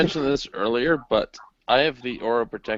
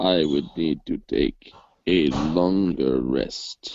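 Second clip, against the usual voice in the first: voice dropped way down low; 7 semitones lower than usual. Voicing Nira speaking a full sentence for the first time, in a deep tone. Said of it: "in a deep tone, Nira says".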